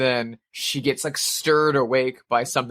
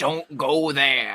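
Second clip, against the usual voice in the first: put-on crotchety, cranky old man voice. Describing a horror movie's roadside stop: imitating a cranky old man. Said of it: "a cranky old man will be like".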